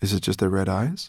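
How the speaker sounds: ordinary delivery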